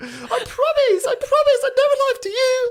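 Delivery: put-on little wooden-boy puppet voice, very high, very loud. Joking in a role after being called a little wooden boy: acting as Pinocchio. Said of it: "little Pinocchio with a wooden nose".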